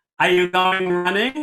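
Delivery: put-on nasal voice with Baltimore accent. Imitating an upstairs neighbor asking an obvious question: nasal Baltimore voice. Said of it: "she has this nasal voice from Baltimore".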